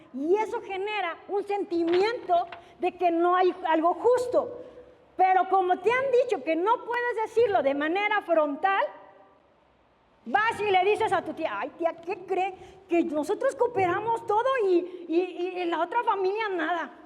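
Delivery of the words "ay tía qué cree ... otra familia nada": normal talking voice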